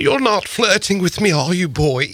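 put-on very high-pitched proper London accent. Discussing a woman's accent, the speaker imitates her line, in a proper London accent. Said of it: "such a proper London accent".

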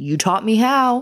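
confronting, throwing-it-back tone. Reenacting the dad stopping Landon after the show: acting out Landon's dad. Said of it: "can I do a quick reenactment of that scene?".

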